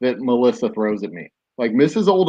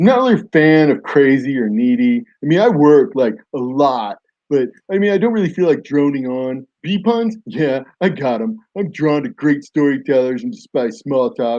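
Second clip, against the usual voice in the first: put-on frat-guy dude bro voice; 2 semitones higher than usual. Reading out this guy's self-description, in your best dude bro voice. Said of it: "in my best dude bro voice".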